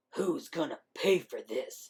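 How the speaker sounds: low, gruff, demanding voice. A narrator reads the line of someone who walked up behind a character, gruff demanding voice. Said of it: "Demanded a gruff voice".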